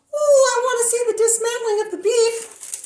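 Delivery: very high, eager talking-garlic puppet voice. The garlic sidekick puppet chimes in while the host cooks meatballs, in garlic puppet voice. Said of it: "Delicious recipe my little garlic sidekick and I are cooking! / [name]".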